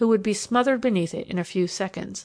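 ordinary delivery, nothing marked

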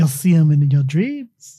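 bad put-on Irish accent. Quoting Darby's reply from the film scene: bad Irish accent as Darby. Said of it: "I can't do an Irish accent".

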